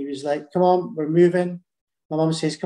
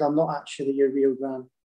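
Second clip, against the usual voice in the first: put-on tearful, crying voice; 3 semitones lower, 4 dB quieter than usual. Retelling what gran said on opening the door; imitating gran in tears. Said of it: "she opened the door in tears and said".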